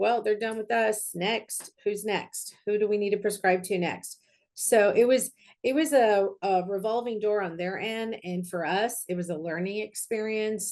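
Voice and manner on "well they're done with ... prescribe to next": usual speaking voice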